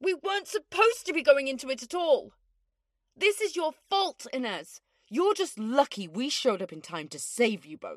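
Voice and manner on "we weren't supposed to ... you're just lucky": heated, scolding, accusatory voice. In a drama, one character blaming Inez for the situation, yelling. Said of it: "stop yelling at me".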